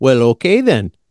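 talking like someone from Fargo. Joining the bit of talking like in Fargo: Fargo accent. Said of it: "And then you have to say".

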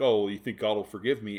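joking fake-angry voice. Recounting how one man jokingly asks another about forgiveness, retelling a mock-angry joke. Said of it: "And Harry's kind of jokingly like".

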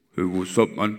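deepest possible, very low bass voice. Quoting a very tall man greeting you, imitating a very deep voice. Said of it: "in the deepest voice ever".

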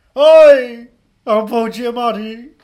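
loud, slow, drawn-out voice. Introducing the local versions of an actor: Jim Broadbent voice. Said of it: "our Paul Giamatti's are all Jim Broadbents".

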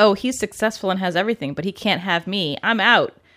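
normal talking voice

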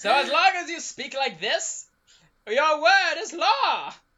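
loud, booming proclamation tone. Demonstrating the voice he once spoke in, He-Man old man voice. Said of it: "I spoke in the He-Man old man voice".

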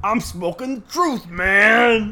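very high, loud, slow stupid voice. Recounting a favorite scene, the speaker quotes a character's line: really stupid voice. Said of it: "in like a really stupid ass voice".

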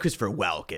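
deep movie-trailer narrator announcer voice. Retelling how the trailer voice-over guy says the actor's name: imitating trailer voice-over announcer. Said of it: "how the, uh, voice ac-, uh, guy says his name in this trailer".

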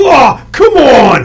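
mock exasperated shout, slow and loud.

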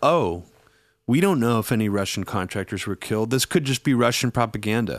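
usual speaking voice

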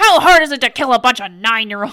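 put-on furious voice. Retelling a movie scene, quoting a character: imitating someone furious. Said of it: "he's so mad about it".

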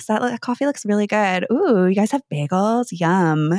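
put-on sexy, sultry voice. Retelling ordering at a coffee counter while playing sexy: imitating own sexy voice. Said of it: "just, like, feel sexy".

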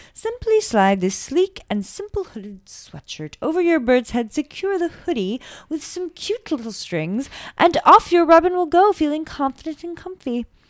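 put-on part-British accent. Reading a mock ad for bird hoodies: put-on demi-british accent. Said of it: "a demi-British accent".

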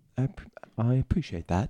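put-on English accent. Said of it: "that that was a great British accent there".

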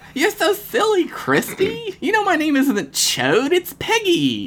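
put-on very high, bubbly, spittle-filled girl voice. Reading a story, a girl in front answers her companion: bubbly, spittle-filled tone. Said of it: "responded in a bubbly, spittle-filled tone".

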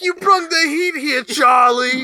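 thick put-on Italian accent. Praising a film character's line read, quoting him in a thick Italian accent. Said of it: "the thick Italian accent".

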